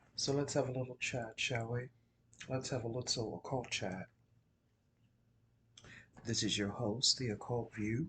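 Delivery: speaking quietly. The host opens the show while a friend sleeps in the household, speaking low. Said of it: "I'm speaking kind of low".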